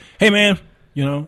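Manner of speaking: very loud, high, relaxed, casual buddy-like tone. Imitating a father chatting with his pastor friends: imitating father's casual talk. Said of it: "when he talked to his, to his, his pastor friends".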